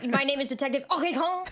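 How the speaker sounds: put-on aggressive French accent. A player introduces their detective character to the group in an aggressive French accent. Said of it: "with a really aggressive French accent".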